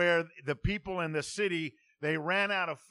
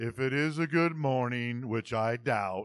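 low, depressing voice at a slower pace; 6 semitones lower than usual. Describing a pessimistic cartoon character, doing an Eeyore voice. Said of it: "kind of depressing voice".

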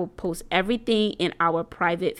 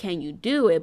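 ordinary talk

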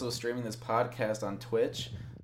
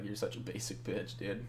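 soft, ribbing, mocking, teasing tone; 2 semitones lower, 7 dB quieter than usual. Retelling how he always teases his roommate Ben: retold teasing jab. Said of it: "I always give him shit like".

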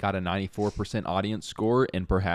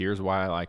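normal talking voice

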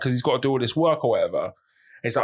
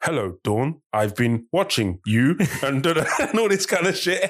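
robotic text-to-speech computer voice. Recalling prank texts read out on a mom's house phone, robotic computer voice. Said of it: "obviously you get the computer voice".

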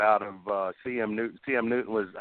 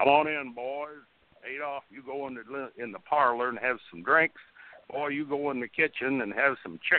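slow-sounding thick, sticky, syrupy voice; 2 semitones higher than usual. Retelling how the Bear welcomed the boys at his door, in the Bear's molasses-mouthed voice. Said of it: "the Bear sounded like he had a mouthful of molasses".

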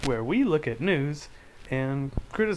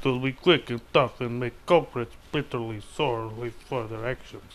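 put-on Russian accent on English words; 4 semitones lower than usual. Rereading a news quote about a Russian warning, in a put-on Russian accent. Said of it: "say that in a Russian accent".

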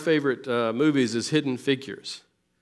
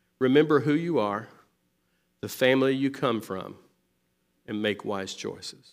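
put-on whisper; 2 semitones lower than usual. Retelling words said into a one-year-old's ear: imitating a whisper. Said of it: "She's whispering it in the ear".

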